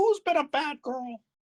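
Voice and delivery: very high, squeaky voice. Acting out Mickey coming into the room, in a Mickey Mouse voice. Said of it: "Make me go full fucking Mickey Mouse".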